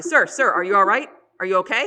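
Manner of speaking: commanding, very loud, authoritative voice. Recounting how he knocks hard to wake a sleeping man: retelling a loud authoritative call. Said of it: "authoritative, very loud voice".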